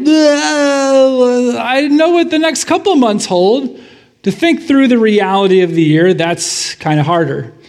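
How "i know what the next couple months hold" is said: high, unsure, hesitant voice. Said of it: "most of us are just like".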